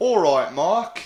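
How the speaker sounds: casual, best-attempt put-on English accent. Teaching a greeting, saying it as if meeting a friend on the street, english accent. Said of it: "I'll do my best to do an English accent".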